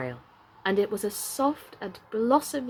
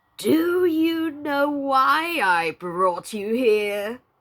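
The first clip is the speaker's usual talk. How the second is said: loud, hungry, whining coyote-like voice; 4 semitones higher, 6 dB louder than usual. Narrator reads the coyote spirit's question to the weaving woman, in a hungry, whining voice. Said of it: "the coyote spirit said in a hungry, whining voice".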